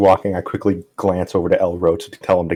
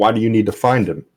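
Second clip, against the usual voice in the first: raised voice called out across a room; 3 semitones higher than usual. In a tabletop game, a player's character yelling across the room. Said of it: "I yell across the room".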